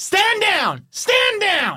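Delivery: very high, drawn-out, swooping yelling. Narrating a scene to players as the door opens, Lieutenant Brewer yelling orders. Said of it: "you can hear Lieutenant Brewer yelling".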